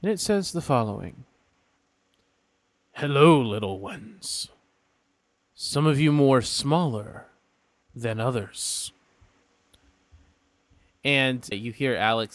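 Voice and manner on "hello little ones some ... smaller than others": disembodied voice, as if inside the mind. Voicing a voice heard in the players' heads: voicing Bahamut. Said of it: "you hear a voice in your heads".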